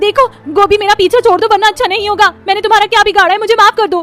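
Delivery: shrill, very high, loud screaming. Reading a story, the narrator voices Neha crying out on the roof, shouting loudly. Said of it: "वो जोर से चिल्लाती है".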